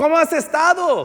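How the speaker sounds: shouted, loud delivery.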